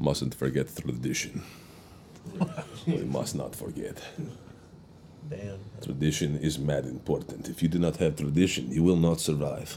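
put-on deep, hushed, soft Russian accent. Riffing on a friend's new tradition, Tevye voice. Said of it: "It sounded Russian, but Darth Vader".

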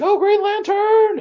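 very high, loud, hollered shout. Retelling what a passing golf cart driver yelled: imitating Nicolas Cage shouting. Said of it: "I hear him shout".

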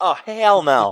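put-on high, loud voice of pre-pubescent ten-year-old. Retelling a reply to the brothers at age ten, in a little kid voice. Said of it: "In my little ten year old pre pre pubescent voice".

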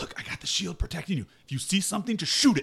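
hushed soft whisper, pitched a bit high. A player's character whispering to Skylar while going down the steps; whispering. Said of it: "I kind of whisper to Skylar".

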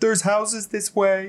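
put-on booming, high-pitched small boy voice. A character's voice calls out of the snowstorm, booming little boy voice. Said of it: "his little boy voice, just booms out".

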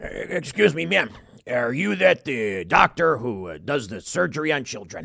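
slow, low, lumbering, portly policeman voice. Acting out an overweight cop walking up to a doctor: playing an overweight portly cop. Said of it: "a single overweight, portly cop waddling up".

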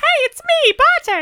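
very high, loud put-on female voice. Speaker defends his range of voices, showing off his put-on female voice. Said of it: "I have my female voice".

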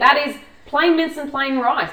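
getting loud. Complaining about a plain mince and rice meal plan: getting loud. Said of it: "I'm getting loud again".

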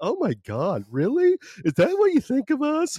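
very high, swooping, aghast, incredulous disbelief. Imitating how liberal friends would react to the show. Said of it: "my liberal friends coming back at me like".

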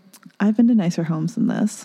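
mock sassy delivery. Retelling what he said to the owners of the home: imitating a sassy remark. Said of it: "this is where he's a little sassy".

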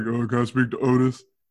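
deep, man-sounding, grown-up telephone voice. Retelling how a friend asked for him on the phone: imitating Greg's deep voice. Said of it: "With your deep ass voice".

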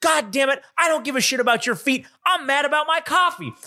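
mock very high, heated yell. Retelling a customer's angry argument over spilled coffee: imitating someone yelling. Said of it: "they're yelling at each other".

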